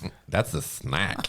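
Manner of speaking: sassy, attitude-laden woman's voice. Joking about the name of a controller simulator: sassy urban woman voice. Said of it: "sassy, like, urban woman voice".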